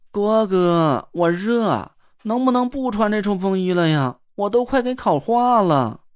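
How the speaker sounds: coy, coquettish, whiny cutesy voice. Tangguo'er finally can't stand it and calls out to Guo Yongzhe: coquettish cutesy whine. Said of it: "嗲声嗲气地朝郭永哲喊了起来".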